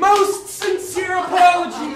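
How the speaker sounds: loud, hollered yell. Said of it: "just stop yelling".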